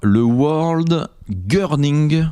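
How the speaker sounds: intentionally awful English accent. A french speaker names the championship in a deliberately bad english accent. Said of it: "Je prends un accent de merde volontairement".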